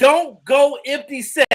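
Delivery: loud, slow mock yell. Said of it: "he gonna be screaming to the coach".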